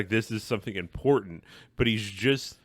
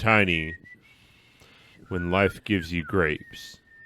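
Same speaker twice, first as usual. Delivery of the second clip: deepest, most sultry put-on voice, lower; 4 semitones lower than usual. Acting out a line to Tiny in James Earl Jones's voice. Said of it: "in his deepest, most sultry voice".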